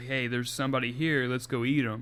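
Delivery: ordinary delivery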